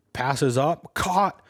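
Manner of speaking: high, loud, slow freak-out scream. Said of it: "he was just freaking out".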